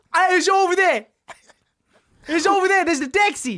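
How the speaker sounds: very high, loud put-on Cockney street accent. Improv scene of two Cockneys looking for a taxi; Cockney accent. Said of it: "two cockneys looking for a taxi".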